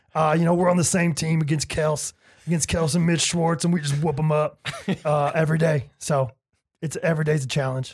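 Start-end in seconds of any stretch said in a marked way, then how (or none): 0.1-5.9 put-on voice with a gravelly tone. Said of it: "That was actually a really good impression".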